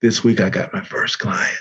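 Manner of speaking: voice audibly breaking up, cracking. Retelling own words to a boss at work: imitating own cracking voice. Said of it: "I can make my voice sound like it's cracking".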